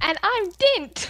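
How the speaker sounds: bad, lovely upbeat put-on voice, very high. Introducing the podcast in place of an absent host: bad impression of Dint. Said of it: "You had to hear my bad impression".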